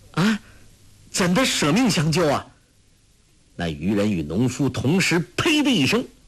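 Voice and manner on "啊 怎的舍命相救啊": high, alarmed, startled and surprised cry. Narrator reads two people exclaiming together: startled. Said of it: "黄蓉二人惊道".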